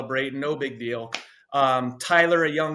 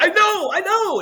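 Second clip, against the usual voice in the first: very high, freaked-out, panicked, drawn-out voice; 7 dB louder than usual. Retelling the reply after being told to leave the game: imitating own panicked reply. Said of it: "I'm just freaking out".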